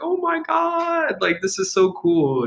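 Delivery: very high, very slow, swooping, acted-out thrilled excitement. Describing a laid-back man who found some eggs: imitating his excitement. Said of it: "he's like pretty enthusiastic about".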